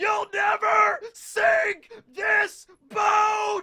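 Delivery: very high, very slow, drawn-out roaring scream. Comparing Rox to a Forrest Gump scene; imitating Lieutenant Dan screaming at God. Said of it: "just screaming at God".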